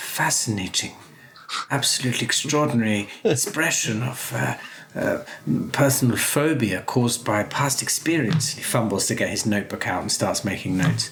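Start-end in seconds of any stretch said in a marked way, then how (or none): 0.0-8.5 muttered character voice, slower. A storyteller voices Johannes Bergman reacting to the lantern being lit; muttering under his breath. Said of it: "mutters under his breath".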